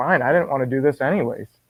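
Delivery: ordinary delivery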